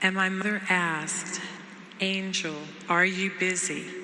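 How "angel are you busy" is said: grave, frightening tone. Retelling a phone call from the mother: imitating mother's frightening tone. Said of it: "in that tone of voice".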